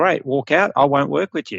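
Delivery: plain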